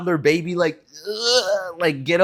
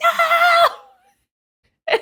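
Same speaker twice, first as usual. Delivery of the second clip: put-on very high, loud, frustrated toddler scream. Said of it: "she would scream like".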